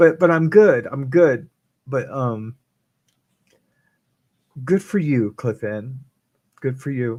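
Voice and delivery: crying while talking, tearful voice. Reacting to a viewer's message about staying together: crying while talking. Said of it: "I'm only crying 'cause I'm an".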